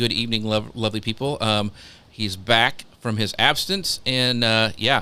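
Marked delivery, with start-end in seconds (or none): none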